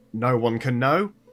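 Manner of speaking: booming, roaring bear-like bellow. A storyteller voices a panicked, roaring bear bellowing inside your head. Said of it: "He he bellows".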